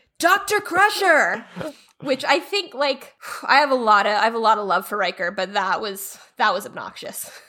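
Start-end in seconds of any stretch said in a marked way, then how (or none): 0.2-1.5 high, slow shout carrying across a distance. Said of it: "he shouts across a crowded courtyard".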